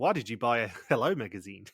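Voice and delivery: odd, weird put-on New Zealand woman's accent. Joking about how the show could have voiced the mole: weird New Zealand woman voice. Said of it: "have a weird New Zealand woman voice going".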